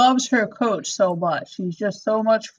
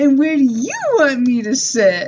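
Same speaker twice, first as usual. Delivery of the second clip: play-acted sugary, overly cute, sing-song voice; 3 semitones higher, 4 dB louder than usual. Retelling a scene, talking to a girl under the table: imitating an extra cutesy tone. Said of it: "extra cutesy with her".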